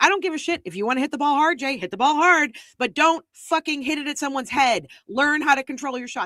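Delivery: high, loud, enraged screaming with hard swearing. Retelling being held back from a much taller guy, re-enacting an angry scream at him. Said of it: "I'm just screaming".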